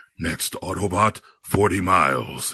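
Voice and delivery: slow robot voice, sounding heroic. Imagining a GPS voice while driving along, Optimus Prime voice. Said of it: "what about if I had Optimus Prime as my voice".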